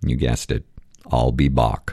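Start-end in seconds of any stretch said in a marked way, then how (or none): 1.1-1.9 put-on deep voice, much lower pitch. Telling a joke where Bach answers a clerk, in a deep voice. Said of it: "he says in a deep voice".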